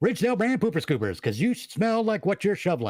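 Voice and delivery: put-on high, old-fashioned ad announcer pitchman cadence. Redoing one of the ad pitches done in the past: transatlantic pitchman voice. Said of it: "one of those pitches I used to do".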